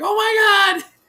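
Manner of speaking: put-on very high, loud, squealing shriek. Retelling how people reacted, imitating people squealing. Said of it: "Were they squealing?".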